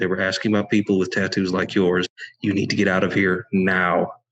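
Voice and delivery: speaking very quietly, hushed. Leaning down to warn a gang leader as a character: speaking real quiet. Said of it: "I lean down real quiet".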